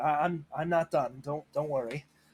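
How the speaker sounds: wavering voice. A hurt character answers a companion who asks about their leg, wavering voice. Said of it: "My voice is wavering at this point".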